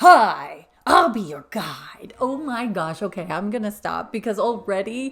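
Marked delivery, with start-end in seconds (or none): 0.0-2.1 very loud, goofy, full cartoon character voice. Speaker tries the voice the guys had to find: Beetlejuice voice attempt. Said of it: "I'm turning into a mixture of Cable Guy and Ace Ventura".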